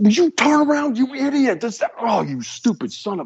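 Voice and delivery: very high, shrill acted screaming, pitch swinging wildly. Watching wrestling and yelling at the referee, retelling his own screaming. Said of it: "I'm like screaming at the referee".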